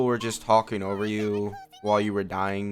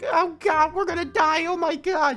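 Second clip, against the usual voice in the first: small, high, squeaky, frightened voice; 5 dB louder than usual. Speaker complains about getting Paimon instead of Dainsleif, squeaky Paimon voice. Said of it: "who's just like a squeaky voice".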